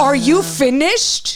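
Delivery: mock loud outburst. Retelling a confrontation in front of the other moms: imitating own loud outburst. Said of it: "I was loud".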